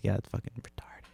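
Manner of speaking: soft, hushed, breathy whisper. Retelling a remark made so the kid wouldn't hear, reenacted whisper. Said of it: "And I kind of like whispered it".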